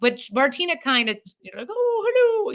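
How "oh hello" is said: the word "hello" said very high-pitched. Showing how the impression sounds: Julia Child voice. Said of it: "that sounds like Julia Childs a little bit".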